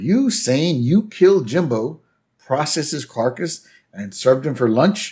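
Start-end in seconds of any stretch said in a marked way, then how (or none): none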